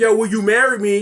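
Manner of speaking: ordinary talk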